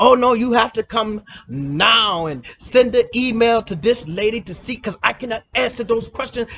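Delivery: insistent, forceful official voice, "now" drawn out. Retelling what the visa official said: imitating an official with bass in voice. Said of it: "you got a little bass in your voice".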